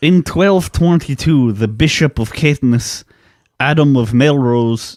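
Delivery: put-on Scottish accent. Answering a request to do a scottish accent: put-on scottish accent. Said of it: "that was bad".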